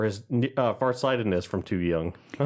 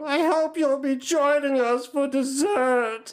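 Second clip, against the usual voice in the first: very high, slow, drawn-out character voice; 3 dB louder than usual. Quoting a favorite character line: Lemon Grab voice. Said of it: "Mine's Lemon Grab one".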